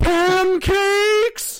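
high, loud, shrieked pancakes.

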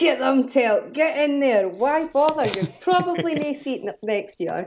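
mock cheering shout. Retelling watching the race at home: shouting at the TV. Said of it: "I was up at my T V going".

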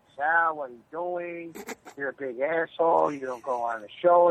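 ordinary delivery

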